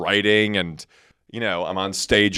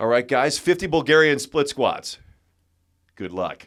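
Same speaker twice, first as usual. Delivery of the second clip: pitched-up, tossed-off, like a trainer's breezy send-off voice; 6 semitones higher than usual. Imitating Don Saladino wrapping up a workout description: Don Saladino impression. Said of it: "it's Don at the end of describing a workout".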